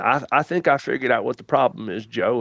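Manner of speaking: easygoing, teasing, joking Kentucky drawl. Retelling what a business coach jokingly said: Pat Rigsby's Kentucky drawl. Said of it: "in his Kentucky drawl".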